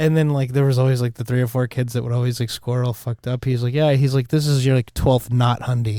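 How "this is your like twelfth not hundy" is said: plain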